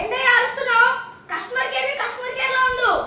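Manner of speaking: put-on irritated old man yelling.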